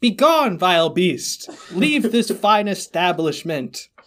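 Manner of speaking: play-acted grand, commanding, proclaiming shout. Retelling shouting to the crowd in an ice cream place: imitating own shout. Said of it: "I shout to the crowd".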